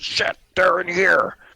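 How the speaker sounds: very high, shrill, very loud goblin yell. Voicing a hobgoblin as the curtain throws open: hobgoblin voice. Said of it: "a hobgoblin voice".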